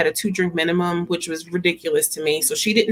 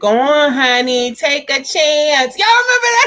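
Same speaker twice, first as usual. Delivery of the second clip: put-on very slow, high, drawn-out little old lady voice; 8 semitones higher, 5 dB louder than usual. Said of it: "In my Coming to America voice".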